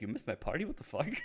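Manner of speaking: put-on affronted, taken-aback, offended outburst. Retelling a character's reaction to missing a party: imitating an offended tone. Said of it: "almost sounds offended".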